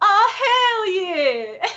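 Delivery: very high, relaxed, easygoing cheerful exclamation. Retelling how a YouTuber says a catchphrase: imitating Jenna Marbles. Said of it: "she goes".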